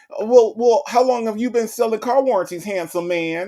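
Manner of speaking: friendly chatty woman's voice. Acting out how a woman who talks to anybody answers scammer calls. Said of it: "That's how she would answer all of the".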